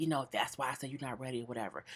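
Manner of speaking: rushed, quick, hushed half-whisper. Retelling what Joe half-whispered about his ex, retelling a half-whisper. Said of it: "He whispers".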